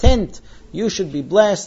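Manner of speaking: plain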